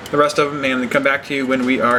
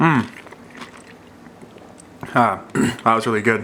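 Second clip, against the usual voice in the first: talking while eating, mouth full; 3 semitones lower than usual. Taking a bite of freshly cooked wings, eating while talking. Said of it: "Sorry for eating in your in your ear there".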